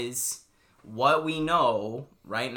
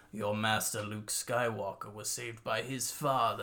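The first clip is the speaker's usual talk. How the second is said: put-on sinister villain voice, lower and quieter; 4 semitones lower, 8 dB quieter than usual. Quoting a favourite movie line delivery: imitating Palpatine's line delivery. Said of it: "when he's like".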